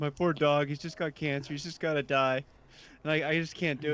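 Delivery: put-on sobbing, tearful, crying through the words. Retelling a scene from an old Cops episode: imitating a man crying. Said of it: "the guy's crying".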